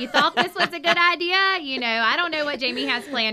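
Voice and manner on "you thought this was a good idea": playful, kindly, loud, high teasing heckle. Describing how a friend will be out there kindly heckling you: playful mock heckling. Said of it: "kindly heckling you".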